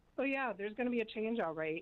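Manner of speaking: put-on negative, not-positive tone. Retelling the old pastor's answer about coming change: imitating a negative tone. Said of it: "it wasn't a positive way she was saying it".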